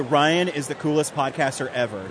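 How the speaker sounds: plain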